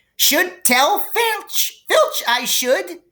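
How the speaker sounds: put-on, very high, pious, saintly sweet voice. A narrator reads Peeves answering the pleading first-years, in a saintly voice. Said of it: "said Peeves in a saintly voice".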